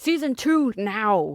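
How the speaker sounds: insistent, aggressive, pushy tone. Speaker describing how people react to their story, retelling an aggressive demand. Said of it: "they're like".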